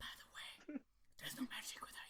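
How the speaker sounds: eerie, creepy, hushed whisper. Acting out a creepy cast member behind you: imitating a creepy whisper. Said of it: "creepy cast member is coming behind you".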